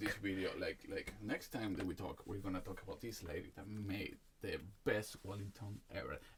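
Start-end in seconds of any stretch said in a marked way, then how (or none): 2.3-6.2 sarcastic, ironic, tongue-in-cheek mock enthusiasm. Telling another speaker about a video of a cook: sarcastic. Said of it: "I'm being sarcastic here".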